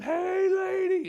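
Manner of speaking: shrill, full-volume, high-pitched yelling scream. Retelling running up to a lady after finding a dead body: imitating own screaming. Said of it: "and I'm screaming".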